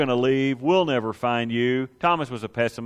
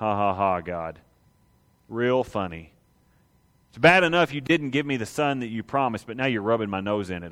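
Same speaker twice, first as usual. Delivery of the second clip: cruel, mocking, bitter, dripping sarcasm with laugh; 3 semitones lower, 3 dB quieter than usual. A speaker retells Sarah laughing at God's promise of a son: voicing Sarah, mock-sarcastic. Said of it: "She's laughing like cruel joke funny".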